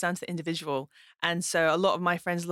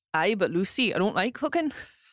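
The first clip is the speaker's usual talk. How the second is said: put-on casual north-east Geordie accent; 3 semitones higher than usual. Imitating what the other speaker might say back, in a Geordie accent. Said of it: "quite a good Geordie accent".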